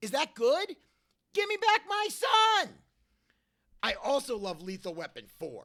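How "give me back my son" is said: very high-pitched, shrill, loud screaming. Show Mel how you say his line from Ransom, as a screaming Mel impression. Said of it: "I sound just like you when I say it".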